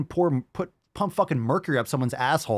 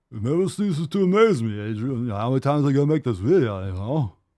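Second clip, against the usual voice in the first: put-on, dumb-sounding movie-hero voice. Repeating the line just mocked, now in a Rocky voice. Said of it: "It sounds like Rocky".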